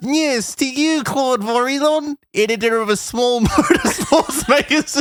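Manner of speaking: very high, squeaky cartoon-animal voice. Reading out an alien's answers from a book: Blinky Bill voice. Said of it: "now you're just doing a Blinky Bill voice".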